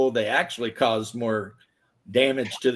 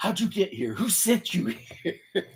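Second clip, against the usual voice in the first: put-on breathy whisper, freaked out, losing it; 8 semitones higher, 6 dB quieter than usual. Retelling a video of a local yelling at a lost driver: imitating someone freaking out. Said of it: "losing it".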